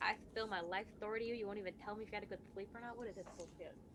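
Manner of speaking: very hushed, low, half-swallowed mumble under the breath. Voicing Aridona complaining that no one will answer her: mumbling under her breath. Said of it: "mumbling under her breath".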